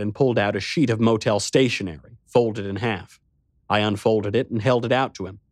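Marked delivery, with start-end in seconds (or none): none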